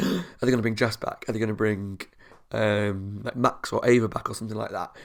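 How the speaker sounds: normal talking voice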